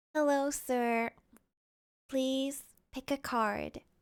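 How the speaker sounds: small, soft, hushed little voice. Trying out a voice for a female character's line, small soft voice. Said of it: "give her a small soft voice".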